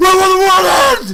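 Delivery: acted-out yell of anguish. A game master acts out the player's character suddenly calling out, retelling an anguished yell. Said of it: "all of a sudden you're just like".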